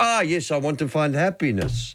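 put-on Mexican accent. Retelling an old gag, answering the other character; Mexican accent. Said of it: "in that beautiful Mexican accent".

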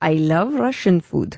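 put-on Russian accent. Performing a line on request after being told of a great Russian accent: Russian accent. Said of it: "that was a bit more Russian".

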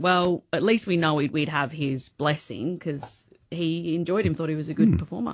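plain

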